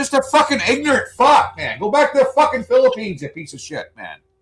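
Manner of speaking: angry shouting. Ranting about a noisy neighbor on a sunday morning: yelling in anger. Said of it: "Sorry for yelling".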